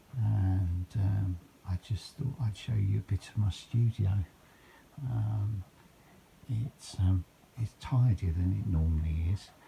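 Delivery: hushed whisper. Early morning with Joe and Arthur still asleep, showing viewers the studio, whispering. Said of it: "I'm whispering because Joe and Arthur are still in bed".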